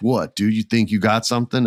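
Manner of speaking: ordinary talk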